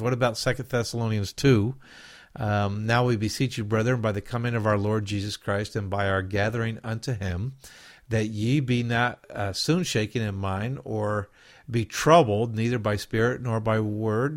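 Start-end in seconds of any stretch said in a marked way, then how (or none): none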